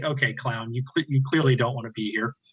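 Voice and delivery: laughing through the words while talking. Retelling a young woman cracking up at him: imitating someone laughing while talking. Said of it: "she's just cracking up. She's like".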